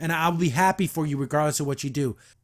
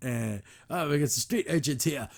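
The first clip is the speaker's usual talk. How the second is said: ridiculous, over-the-top put-on British accent; 5 dB quieter than usual. Retelling a scene, voicing the mechanic lady as she opens the door, ridiculous British accent. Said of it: "ridiculous British accent".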